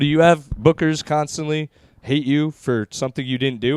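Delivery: ordinary delivery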